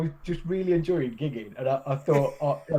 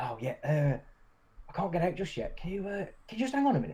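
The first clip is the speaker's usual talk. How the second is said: hushed, soft stage whisper; 8 dB quieter than usual. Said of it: "in a stage whisper".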